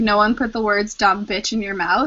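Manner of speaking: normal talking voice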